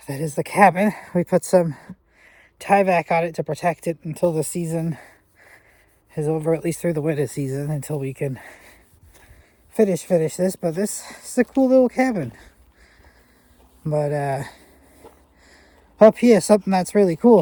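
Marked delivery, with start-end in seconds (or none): 10.6-17.4 winded, breathless, higher-pitched talk. Showing viewers around a cabin while catching breath, out of breath. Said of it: "just trying to catch my breath".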